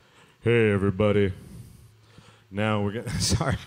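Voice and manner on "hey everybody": bassy, bass-heavy voice, much lower pitch. Trying out a microphone, greeting everybody: bassy voice. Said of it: "I sound all bassy".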